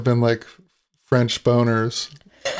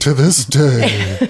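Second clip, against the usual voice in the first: put-on serious TV narrator voice, louder; 4 dB louder than usual. Doing a mystery-show narrator line as a Robert Stack impression. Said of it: "that was my Robert Stack impression".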